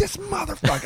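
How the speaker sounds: very high, acted-out, enraged furious scream. Speaker retells screaming alone in the car after yelling at a guy: retelling a furious scream. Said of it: "screaming about it in the car by myself".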